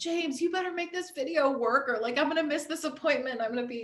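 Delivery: mock, high, desperate shouting. Retelling yelling at the husband to make the video work: retelling own past yelling. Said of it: "I'm yelling at my husband".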